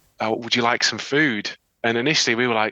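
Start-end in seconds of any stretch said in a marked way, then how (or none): none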